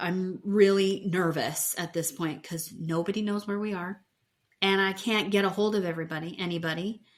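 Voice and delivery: ordinary talk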